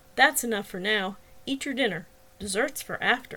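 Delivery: ordinary delivery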